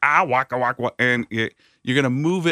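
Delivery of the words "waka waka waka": put-on puppet bear voice, lower pitch. Demonstrating for someone learning impressions: Fozzie Bear voice. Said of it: "now we're going to take the Fozzie Bear".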